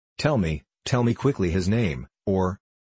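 ordinary delivery

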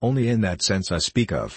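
ordinary delivery

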